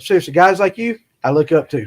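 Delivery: welling up, teary, choking up, close to crying. Telling a guest he looks up to guys like him, teared up. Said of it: "I get teared up".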